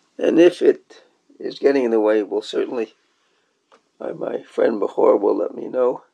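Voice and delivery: hoarse, creaky, rough voice.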